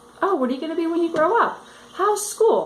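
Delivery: fast, high, sarcastic mock chatty voice.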